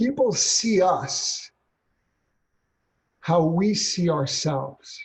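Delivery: very slow, deliberate, slow-motion delivery, every word spaced. Speaker explains why trainees failed, saying it in slow motion. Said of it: "I say this in slow motion".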